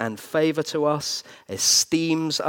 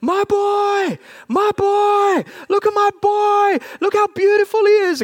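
mock overjoyed shouting, higher and louder; 7 dB louder than usual. Retelling how a gold winner's father answered an interviewer, acting out his joyful shout. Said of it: "that man just shouted".

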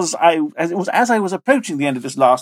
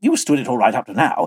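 ordinary delivery

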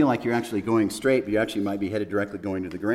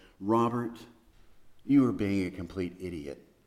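put-on kindly, deeply compassionate voice; 4 dB quieter than usual. After a very long pause she answered him; speaker retells it in a deeply compassionate tone. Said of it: "with a deeply compassionate voice".

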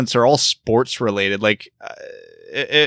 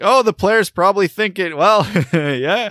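commentator voice, chuckling, pitched up; 7 semitones higher than usual. Imitating a color commentator's little chuckle: imitating Mickey chuckling. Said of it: "he'll get that little Mickey chuckle".

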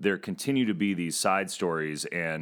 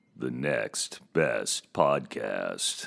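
very slow, creaky, rough voiceover announcer voice; 7 semitones lower than usual. Asked to say the show's name like its announcer: announcer voiceover voice. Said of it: "Let's hear you say Next Best Podcast".

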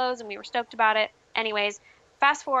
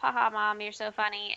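mock dismissive laugh, quieter; 5 dB quieter than usual. Retelling a reply to a mother's joke: retelling laughing it off. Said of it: "laughed it off".

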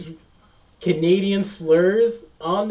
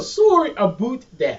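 stock, put-on Canadian accent; 4 semitones higher than usual. Showing how Canadians apologize: imitating a Canadian accent. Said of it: "That's how you know when someone's Canadian".

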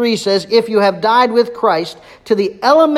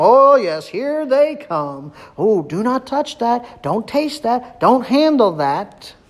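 mock, heavily sarcastic put-on voice. Acting out the false teachers' rules: sarcastic imitation of false teachers. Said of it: "He's using sarcasm".

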